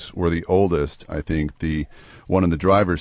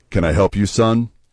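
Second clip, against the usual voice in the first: bold, confident, puffed-up, manly, authoritative voice; 3 semitones higher, 4 dB louder than usual. Retelling speaking to a big guy in a car's driver's seat, confident manliest voice. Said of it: "in my most confident, manliest voice".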